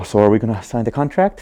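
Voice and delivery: mock shaky, trembling voice. Acting out the moment of asking for money, imitating own shaky voice. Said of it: "my voice still shakes every time".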